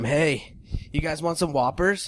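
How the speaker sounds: easygoing, mild holler, kept light. Retelling a shout out a car window at passing girls: imitating someone yelling. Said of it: "starts yelling at him".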